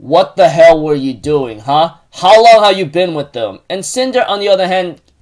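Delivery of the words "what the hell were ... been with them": plain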